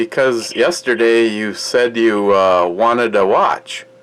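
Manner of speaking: deliberately slow, drawn-out, over-clear delivery.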